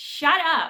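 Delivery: put-on irritated scolding. Retelling a friend telling her off for giggling at the movies, imitating irritation. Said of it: "my friend gets irritated with me".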